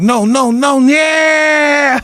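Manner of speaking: play-acted frightened, very high and very slow. Retelling own scared reaction at the start of a trip: retelling own scared protest. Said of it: "you're so scared".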